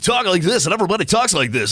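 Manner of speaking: high, loud, fast, hyped radio DJ voice.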